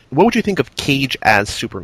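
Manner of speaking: ordinary talk, nothing marked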